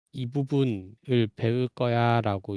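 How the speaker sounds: ordinary talk, nothing marked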